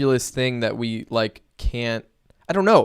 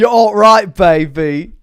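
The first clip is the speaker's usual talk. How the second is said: very loud, high, bad put-on British accent, drawn-out baby; 7 semitones higher, 11 dB louder than usual. Riffing on a viewer comment, the speaker does an awful Austin Powers impression. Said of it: "in an awful British accent".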